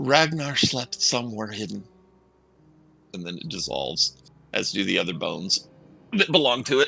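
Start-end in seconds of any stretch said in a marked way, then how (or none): 0.0-1.8 put-on young disembodied female voice. Narrating to the players, a voice answers their question: young disembodied female voice. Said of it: "you hear a female voice, young, disembodied".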